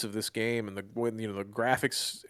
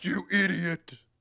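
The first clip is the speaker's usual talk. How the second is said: high, insulting, put-down tone; 7 semitones higher than usual. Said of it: "He's like".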